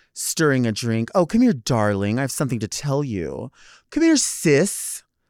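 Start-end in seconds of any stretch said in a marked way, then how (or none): 1.2-5.1 oily, sugary, syrupy sweet smarmy tone. Imitating someone calling another person sweetie: imitating a smarmy tone. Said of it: "it's smarmy".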